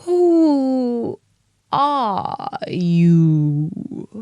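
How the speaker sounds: lazy, drowsy, languid, sleepy drawl. Reading Alice in Wonderland, the Caterpillar addresses Alice in a languid, sleepy Caterpillar voice. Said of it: "addressed her in a languid, sleepy voice".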